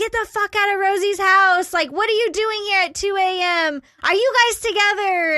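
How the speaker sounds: put-on furious yelling, high and angry. Retelling how someone yelled through the chained door at night: imitating someone yelling. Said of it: "he starts yelling at you".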